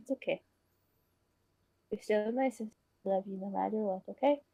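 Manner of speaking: very quiet, gentle, soft, comforting reassuring tone. Retelling how a girl comforted her sister while holding her, very quiet. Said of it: "Just very quiet".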